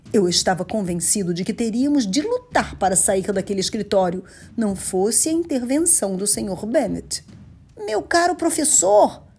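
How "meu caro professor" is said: very high, creaky, rough exclamation. Mr. Bennett intervenes, speaking to the professor, exclaiming. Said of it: "ele exclamou".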